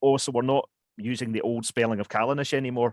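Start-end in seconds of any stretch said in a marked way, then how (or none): none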